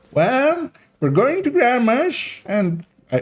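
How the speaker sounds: very high, put-on old granny voice. Acting out the mom's reply to her kid, in an old grandma voice. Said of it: "why am I doing a grandma voice for the mom?".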